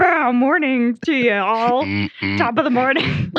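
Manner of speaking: playful, fun, swooping radio DJ announcer delivery. Opening their radio show, a co-host greets everyone: fun radio DJ voice. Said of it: "We're trying to do a fun radio voice".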